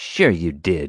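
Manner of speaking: low, menacing, snarling voice. An accuser dismisses the narrator's denial of stealing and vandalism: snarled. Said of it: "Marge snarled".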